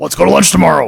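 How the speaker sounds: very loud, big, booming voice. Quoting what an author said after dinner, asked to do the voice: Eric Flint voice. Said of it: "Do the voice, though".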